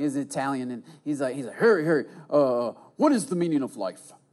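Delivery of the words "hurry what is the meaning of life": put-on New York accent. Retelling being stopped in the hallway, imitating Ron's New York accent. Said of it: "He had like this New York accent".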